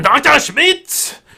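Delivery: brash, very high-pitched, loud shout. Retelling a man stomping across the room toward a doctor: shouting. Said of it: "and he shouts".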